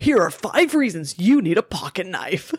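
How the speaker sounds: put-on forceful, aggressive male voice. Retelling a video heard from the listener's phone in bed, imitating an aggressive man voice. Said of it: "this such aggressive man voice".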